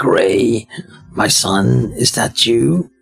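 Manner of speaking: scratchy, raspy voice. Reading a game scene aloud, an old man speaking: scratchy voice. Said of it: "He starts talking in a scratchy voice".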